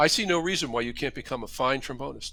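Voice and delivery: ordinary talk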